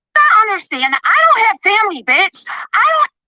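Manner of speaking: screechy yelling. In a heated argument, answering an attack about family, yelling, screechy. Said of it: "but why are you yelling, you screechy hoe?".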